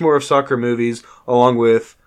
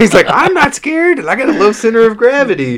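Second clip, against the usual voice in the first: put-on kid voice, much higher; 10 semitones higher, 4 dB louder than usual. Recapping a penalty shootout, acting out the kid who volunteers: Little Newt kid impression. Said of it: "when I did that impersonation".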